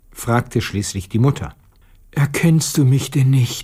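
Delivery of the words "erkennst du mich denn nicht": hushed whispering. Narrator reads Petja answering the mother, whispered. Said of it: "flüsterte Petja".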